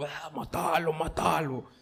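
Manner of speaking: terrifying, sinister, menacing horror voice. Showing how tempting thoughts do not sound: terrifying horror voice. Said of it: "con una voz casi como de terror".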